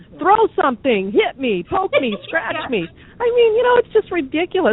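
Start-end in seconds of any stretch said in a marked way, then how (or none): 0.2-2.8 acted-out screaming, pitched higher. Acting out a guest who screams at the host in their house: imitating someone screaming. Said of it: "they just start screaming at you like".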